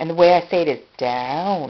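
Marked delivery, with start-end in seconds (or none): 1.0-1.7 the word "down" long and stretched out. Showing how she gives a training cue to a learner, drawn-out "down". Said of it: "I draw it out like that".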